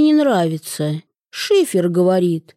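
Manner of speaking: plain reading voice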